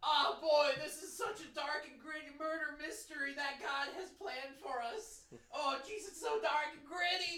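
high, stretched-out hollering in character voice. Playing a character whose body is dead and whose head yells: yelling in character. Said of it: "my head yells".

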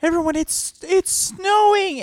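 put-on yelling. Retelling how an actor yelled from off stage to the kids, imitating someone yelling. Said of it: "he yells off stage".

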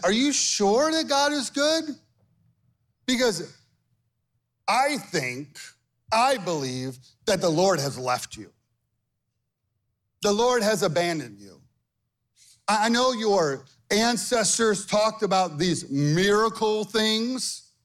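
mock needling, sarcastic jeer with swooping pitch. Voicing the enemy taunting Gideon about God: imitating the enemy's sarcasm. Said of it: "You hear the sarcasm".

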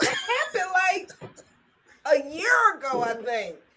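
very high-pitched speech, crying through tears. Answering Tony's question about a past moment, the speaker is crying while talking. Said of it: "I don't even know why I'm crying".

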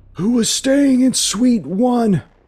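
shrill, very high, very loud scream. Narrator voices somebody in the scene shouting a question; screaming out loud. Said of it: "You hear somebody scream out loud".

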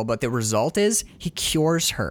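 plain

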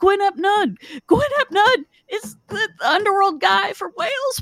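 yelling at a very high pitch. Recounting yelling at a podcast host who couldn't hear, retelling a yell at the podcast. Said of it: "And I'm yelling at the podcast".

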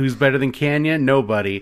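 put-on loud thick New York accent. Telling co-hosts about a goofy late-90s WCW wrestler's catchphrase: Chris Kanyon New York accent. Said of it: "But like with a thick New Yorker accent".

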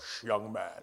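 very deep, very low man's voice, hushed. Retelling a man shushing him in the bathroom, Dave Hubert's deep voice. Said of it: "he had a really deep voice".

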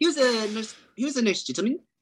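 high-pitched posh British accent.

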